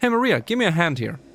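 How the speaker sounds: light, easygoing, lighthearted delivery. Imitating the original version of the line: lighthearted James voice. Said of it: "a little bit lighthearted".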